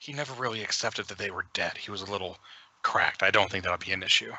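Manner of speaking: hushed whisper. Voicing the gardener girl about the weeping innkeeper: whispering. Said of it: "she kinda whispers".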